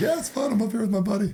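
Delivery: silly high voice.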